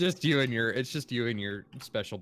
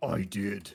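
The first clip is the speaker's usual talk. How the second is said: voice dropped very low, very deep. Answering own question about cooking a potato: voice dropped very low. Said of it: "your voice dropped, like, seventeen octaves".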